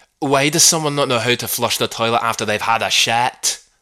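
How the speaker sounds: put-on broad Scottish accent. Try to do justice to the mother's famous interrupting line, in a put-on scottish accent. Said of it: "there are worse Scottish accents".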